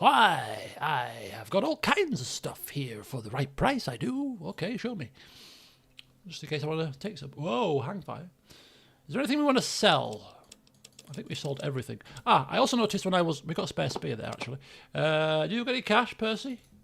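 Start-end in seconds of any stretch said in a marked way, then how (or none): 0.0-4.4 slow, short, put-on ghoul character voice. Voicing a ghoul merchant asked what he has to trade, Percy the ghoul's voice. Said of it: "a short ghoul".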